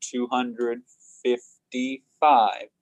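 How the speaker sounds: slow, deliberate delivery, word by word. Teaching how to say a number aloud, said slowly, word by word. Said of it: "So if I say it slow".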